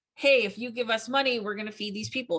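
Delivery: ordinary talk, nothing marked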